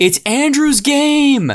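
shrill, very high, loud hollering. Describing the first of several people, retelling an old man's yell. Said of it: "and he's yelling".

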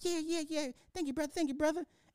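very high, eager, grateful, repeated delivery. Acting out a homeless person thanking the giver for twenty dollars: acting a grateful homeless person. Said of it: "getting mad at the homeless person".

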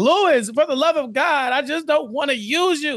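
high-pitched, pleading, close to tears. Retelling a character's plea to Lewis, imitating someone in tears. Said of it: "he's pretty much in tears".

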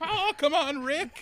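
very high, dragged-out, stretched-out put-on character voice. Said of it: "You sound like Morty".

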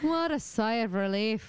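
slow, put-on Irish accent throughout. Reacting with relief to a misheard word: irish accent. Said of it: "Why did I go into an Irish accent?".

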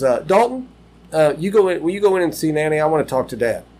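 play-acted firm, stern, disciplining parent voice. Retelling Jen Ray in the front seat sending a boy inside, imitating Jen Ray's stern voice. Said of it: "she has a stern voice, like a parent voice".

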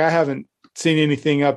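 ordinary talk

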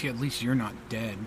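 low, quiet, muttered grumbling off to one side. A woman off to the listener's side grumbles a reply, quiet grumble. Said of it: "you hear a woman quietly grumble off to your side and goes".

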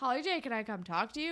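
ordinary talk

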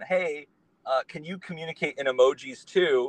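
ordinary talk, nothing marked

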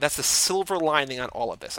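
plain

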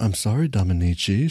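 soft, gentle and quiet. Peach apologizes to Dominici after being told off, speaking softly. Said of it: "she says softly".

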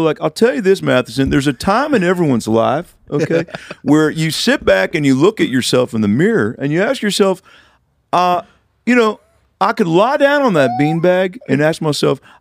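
confident talk-show counsellor voice, holding court. Feeling more confident, address Matheson like Doctor Phil. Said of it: "like a Doctor Phil".

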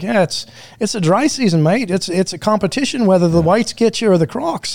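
clumsy, butchered attempt at an Australian accent. Retelling what an Australian guy said about going swimming, in a bad Australian accent. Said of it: "I'm going to butcher my fucking Australian accent".

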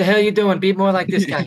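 acted-out yelling. Telling a story, the speaker acts out yelling at the colonel; retelling a yell. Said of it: "And I yell at the colonel".

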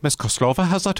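vague put-on Irish accent. Retell the ex-ira man greeting an ex-kgb russian lady, imitating a vague fake irish accent. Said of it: "it's this kind of Irish accent".

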